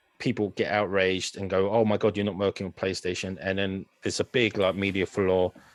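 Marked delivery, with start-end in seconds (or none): none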